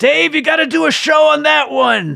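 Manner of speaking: very loud, very high, rough holler. Retelling how a dad in a dark theater audience yelled: imitating someone yelling out. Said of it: "all you hear is my dad yell out".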